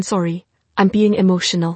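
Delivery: ordinary delivery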